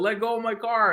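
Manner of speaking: very high-pitched yelling. Retelling yelling at a tow truck guy: retelling own yell. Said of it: "yelling at the guy".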